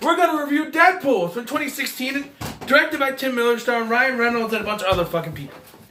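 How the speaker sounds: very high, irritated, angry rant. Opening a movie review, sick of redoing reviews, pissed off. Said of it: "I'm pissed".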